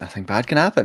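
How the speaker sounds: quiet, hushed half-whisper muttered under the breath. Player voicing their character during a game, half-whispering under breath. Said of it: "He just whispers under his breath".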